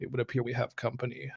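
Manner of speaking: put-on rasping, gravelly old woman's croaking voice. Retelling a scene where she points a creepy skeletal finger: gravelly old lady voice. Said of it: "in like a an old gravelly old lady voice".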